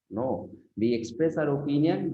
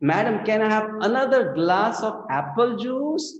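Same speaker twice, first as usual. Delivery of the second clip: acted, very high, loud call carrying far; 10 semitones higher, 5 dB louder than usual. Retelling asking the lady on a flight for more juice: imitating a loud request. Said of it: "he very loudly said, so that all in the flight could hear".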